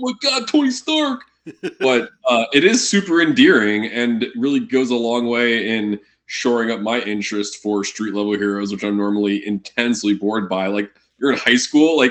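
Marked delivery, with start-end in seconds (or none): 0.0-1.2 fake Brooklyn accent, very high pitched. Discussing street-level superheroes, imitating Tom Holland's fake Brooklyn accent. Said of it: "fake ass Brooklyn accent being like".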